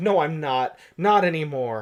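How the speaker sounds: ordinary delivery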